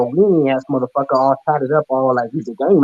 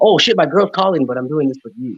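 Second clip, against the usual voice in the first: ordinary talk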